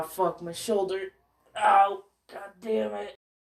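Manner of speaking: pained, hurting, wincing cry. Telling a story when a shoulder suddenly hurts: in pain. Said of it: "I'm in pain".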